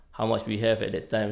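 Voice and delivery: ordinary talk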